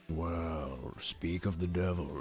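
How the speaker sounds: deepest possible voice, very low, drawn-out well. Asked for the deepest voice possible, channeling Vox Akuma: deepest voice as Vox Akuma. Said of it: "channel your inner Vox Akuma".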